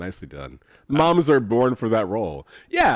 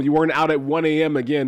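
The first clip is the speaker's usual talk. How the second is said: ordinary talk, nothing marked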